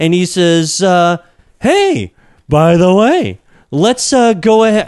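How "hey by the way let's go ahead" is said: high, swooping comedian voice, pitch swinging wide. Retelling a product announcement: Tim Cook as Jerry Seinfeld impression. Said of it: "doing Tim Cook with a Jerry Seinfeld impression".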